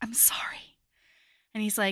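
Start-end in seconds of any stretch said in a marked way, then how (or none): 0.0-0.8 put-on whisper, quieter. Retelling a scene where a character apologizes: imitating a whisper. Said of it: "And then she whispers".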